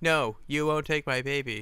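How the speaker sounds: mock bad voice acting, like a badly dubbed line. Describing a film's dubbed dialogue, imitating terrible ADR acting. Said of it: "in the worst acted A D R I've literally ever heard".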